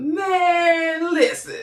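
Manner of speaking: impassioned, very high voice. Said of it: "that's my impression".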